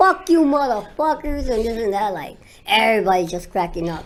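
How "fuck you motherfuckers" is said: high-pitched mock screaming, letting loose. Retelling being stared at in the airport: retelling own screaming. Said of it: "screaming at them, like".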